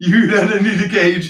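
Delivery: put-on Montreal accent. Talking with Jim, put on your best Montreal voice. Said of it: "In my best Montreal voice".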